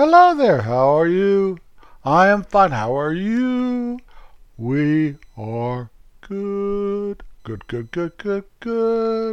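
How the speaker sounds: put-on sing-songy delivery. Showing what a sing-songy voice sounds like, put-on sing-songy voice. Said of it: "since I'm not a sing-songy voice type of guy".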